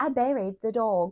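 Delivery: speaking in a British accent. Repeating a phrase whose pronunciation is being debated: British-sounding accent. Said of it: "that sounded British".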